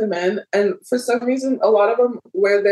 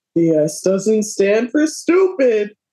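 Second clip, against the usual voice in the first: doing a woman's voice. Asked for your best impersonation of her, show how she goes, as a Tara impersonation. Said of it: "imitate her voice like that".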